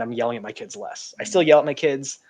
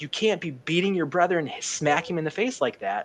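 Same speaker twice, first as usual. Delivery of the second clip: put-on sharp scolding yell, pitched up; 5 semitones higher than usual. Retelling yelling at the six-year-old for hitting his brother: imitating own yelling. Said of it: "then I'm yelling".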